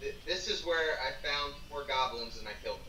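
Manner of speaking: normal talking voice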